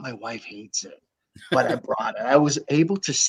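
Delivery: hushed, secretive, confidential whisper. Speaker confiding something to a listener, whispering. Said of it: "why are you whispering".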